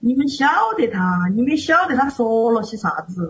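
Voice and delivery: put-on Sichuan accent laid into the words. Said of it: "这个四川味就出来了".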